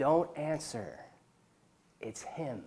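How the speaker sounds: soft, hushed stage whisper. Telling a story, act out the wife speaking in her husband's ear, thinking she's whispering. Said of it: "she thinks she's whispering".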